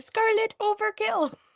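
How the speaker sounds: very high, small little-creature voice. Telling another speaker what a name reminds them of: Minions voice. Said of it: "picture the little Minions going".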